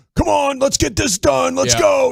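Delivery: mock coach yell. Retelling how Walchuk watched the game in coaching position: imitating Walchuk yelling like a coach. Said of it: "in coaching position".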